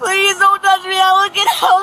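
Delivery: crying, sobbing, pleading voice.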